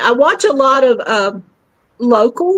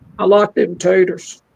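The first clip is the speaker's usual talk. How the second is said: guttural put-on voice, pitched much lower; 4 semitones lower than usual. Retelling how a performer switched to a guttural voice to do Sling Blade: guttural Sling Blade voice. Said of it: "Then he got to that guttural".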